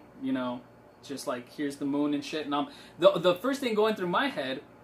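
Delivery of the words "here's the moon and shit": plain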